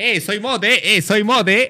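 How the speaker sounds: high, loud, mock proud boasting, jokey.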